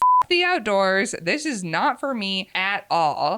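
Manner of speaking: ordinary talk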